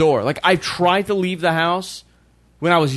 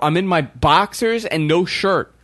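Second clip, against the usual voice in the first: plain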